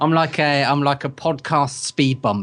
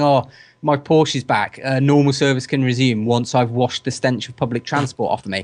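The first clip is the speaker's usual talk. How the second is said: plain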